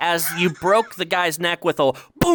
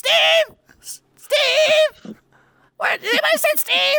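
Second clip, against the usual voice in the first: piercing frantic scream, very high, one word drawn out. Narrating a story where Sheldon calls for the missing Steve, screaming frantically. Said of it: "Sheldon then screams out".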